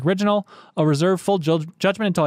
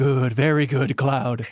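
low, slow, calm and menacing voice; 4 semitones lower than usual. Quoting the villain near the end of the scene: imitating Sephiroth sounding like Emperor. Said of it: "he almost sounds a little like Emperor".

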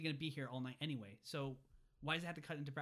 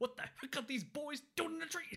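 very high-pitched, storming shout; 12 semitones higher than usual. Recounting a man storming in on boys in a tree, retelling someone shouting.

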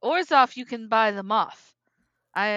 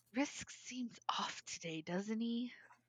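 very hushed, quiet whisper; 17 dB quieter than usual. In a role-play, a character leans over to another character: quiet whisper. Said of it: "she's gonna quietly whisper".

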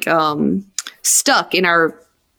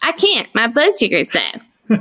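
mocking put-on toddler voice, much higher pitch; 5 semitones higher than usual. Retelling how Kevin answered the speaker without missing a beat: imitating Kevin's mocking toddler voice. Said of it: "in this mocking, 2-year-old toddler voice".

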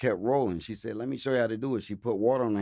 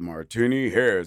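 loud, booming, smooth radio announcer voice; 5 dB louder than usual. Retelling how the show's host introduced him, imitating Motown Mike's radio voice. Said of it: "He had that radio voice".

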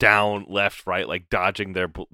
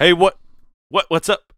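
choppy, glitchy, breaking-up voice, very high and loud; 11 semitones higher, 9 dB louder than usual. Acting out the force as a bad phone line: breaking-up phone call voice. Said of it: "like a call that's breaking down".

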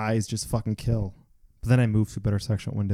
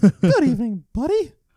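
squeaked out, high and loud; 14 semitones higher, 8 dB louder than usual. Speaker imitates a Mickey Mouse clock announcing the time: Mickey Mouse impression. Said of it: "That's my Mickey Mouse impression".

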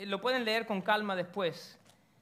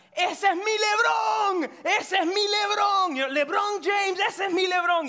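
put-on yell, higher and louder; 11 semitones higher, 8 dB louder than usual. Retelling how a boy's father at a game started shouting: imitating a father shouting. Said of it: "el padre del chiquito empezó a gritar".

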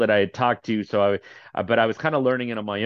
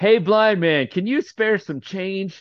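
high, loud yelled-out call; 9 semitones higher than usual. Retelling how a man sitting at the stop called out to him: retelling a yell. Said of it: "he yells out at me".

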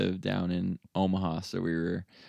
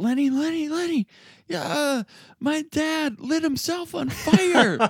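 acted-out, very high, drawn-out, panicked, freaking-out voice; 4 dB louder than usual. Retelling a friend's phone call about his father: imitating J D frantic. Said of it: "completely frantic, just panicked".

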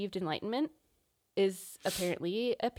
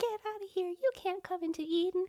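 put-on tiny, very high-pitched baby voice; 11 semitones higher than usual. Discussing cherubs guarding Eden, a speaker voices one: cherub baby voice. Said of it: "do you think a cherub would have a baby voice?".

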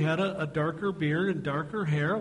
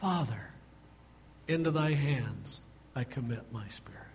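quieter, softer, faster; 4 semitones lower, 5 dB quieter than usual. Retelling the last words spoken from the cross, in a quieter voice. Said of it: "probably in a quieter voice".

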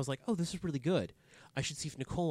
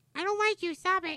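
put-on sassy cat voice, higher and louder; 6 dB louder than usual. Voicing the sleepy cat Tilly talking back: almost an Elmo voice. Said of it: "You almost go into, like, an Elmo".

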